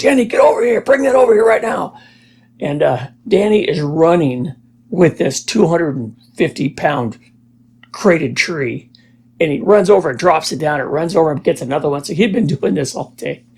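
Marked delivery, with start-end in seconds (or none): 0.0-2.0 mock yelling, pitched up high. Retelling how a friend's dad called him over: imitating a dad yelling. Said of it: "Danny's dad is yelling at him".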